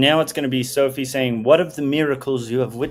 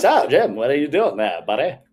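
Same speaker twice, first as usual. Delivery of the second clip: imitated Mid-Atlantic accent. Imagining hanging out with someone who always talks Mid-Atlantic, Mid-Atlantic accent. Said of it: "mid Atlantic all the time? I'd be like".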